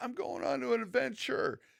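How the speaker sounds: acted, very high, super excited, thrilled outburst. Retelling a scene where another halfling asks where he's going, imitating Bilbo's excitement. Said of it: "Super excited".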